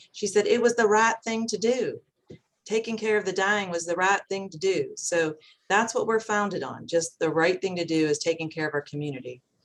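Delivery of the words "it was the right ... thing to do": put-on West Virginia accent. Quoting a woman who gave her blessing to be imitated, in a west virginia accent. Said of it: "now she has a West Virginia accent".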